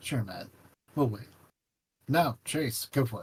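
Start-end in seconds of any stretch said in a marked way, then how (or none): 0.0-1.3 soft, quick, gentle, lowered voice. Speaker addresses T J while giving Leo a meaningful look, gently lowered voice. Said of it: "I lower my voice gently".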